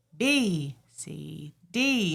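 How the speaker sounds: letters sung rising and falling, very slow and drawn out. Demonstrating an alphabet exercise for teaching children, voice going up and down. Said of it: "Your voice would go up and down with each one".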